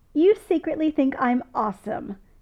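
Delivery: gleeful, delighted gloating, high and loud. One man gloats to another after an admission, gleeful. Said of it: "Jim says gleefully".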